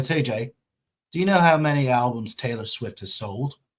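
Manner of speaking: rough, butchered put-on European accent. Retelling a message Kevin sent, trying Kevin's European accent, butchered. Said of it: "and I'll butcher it, but I'll try it".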